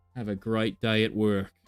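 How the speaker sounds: weak, not-great put-on Australian accent. Thanking viewers for popping in, in a not-great australian accent. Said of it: "Not my best Australian accent".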